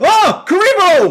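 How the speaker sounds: high, loud, startled, floored exclamation. Retelling how Pegasus reacts in the duel, imitating Pegasus sounding shocked. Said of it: "how surprised and shocked Pegasus sounds the way he says".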